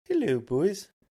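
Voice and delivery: weird put-on Canadian accent, very high and loud. Retelling greeting the skating buddies, in a weird Canadian accent.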